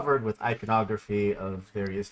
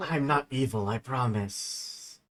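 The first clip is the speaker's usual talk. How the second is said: soft, hushed little whisper; 2 semitones higher than usual. Voicing a book that speaks: whispering. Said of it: "just whispers".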